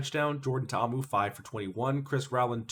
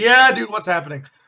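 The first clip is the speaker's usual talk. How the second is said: mock-drunk man voice, much higher and louder; 9 semitones higher, 12 dB louder than usual. Recounting a front-row guy who didn't know what to do, imitating a drunk fan. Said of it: "He's probably just drunk out of his mind".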